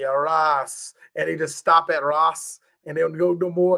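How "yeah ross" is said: put-on Jamaican accent, lower pitch. Imitating how jamaican people talk: imitating jamaican people. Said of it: "You ever hear Jamaican people like".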